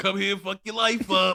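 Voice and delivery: loud, very high-pitched put-on Bronx accent. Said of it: "like Bronx accent".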